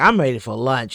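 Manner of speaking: indifferent, can't-be-bothered female police officer voice. Commenting on body cam footage, imitating the lady cop. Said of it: "That's what she sounds like, the, the lady cop".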